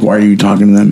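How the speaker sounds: negative, hostile tone. Retelling what a man in the store said, imitating a negative, hostile tone. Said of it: "he was saying it in a negative way".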